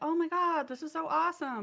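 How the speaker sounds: high-pitched enthusiastic gushing that sounds sarcastic. Explaining why they dislike getting gifts in person, the speaker shows gushing that sounds sarcastic. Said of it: "but it comes across as like sarcastic".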